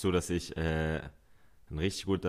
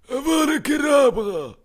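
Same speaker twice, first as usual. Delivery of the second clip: very high, very loud, full-force villain cry; 13 dB louder than usual. Chatting about Prisoner of Azkaban: Voldemort voice. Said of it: "ein richtig guter Voldemort-Imitator".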